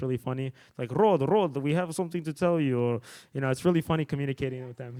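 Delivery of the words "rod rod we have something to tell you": put-on heavy Russian accent. Speaker imitating his Russian crew members: thick Russian accent. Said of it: "they have this really thick accent".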